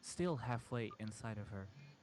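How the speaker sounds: ordinary delivery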